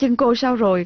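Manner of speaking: plain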